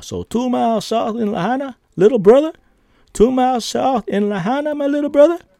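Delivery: put-on very high-pitched Southern accent, dude voice. Retelling what Herman the cat asked, imitating a Southern dude. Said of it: "Like a Southern dude".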